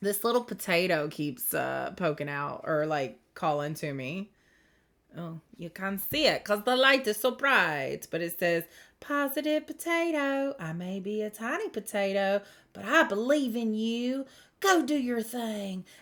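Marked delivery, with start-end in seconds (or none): 9.0-15.8 really strong, laid-on rural country accent. Reading a tiny potato card's message aloud in a really country accent. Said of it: "I always have to say it in like that really country accent".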